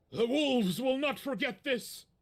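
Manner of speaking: loud, high-pitched shouted yell. Voicing a character who yells after a fleeing player: NPC yelling. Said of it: "he yells to you".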